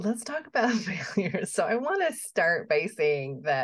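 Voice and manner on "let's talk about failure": giggling through the words with raised pitch. Proposing to talk about failure, said with a laugh. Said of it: "I like how you said that with a laugh".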